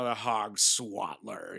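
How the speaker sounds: slow, drawn-out giant voice with odd speech.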